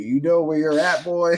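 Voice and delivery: put-on Alabama accent, fast and high-pitched. Quoting Hardcore Holly beating up a WCW fan, in an Alabama accent. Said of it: "with the Alabama accent".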